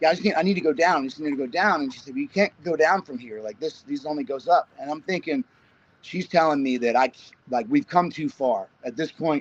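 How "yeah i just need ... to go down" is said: plain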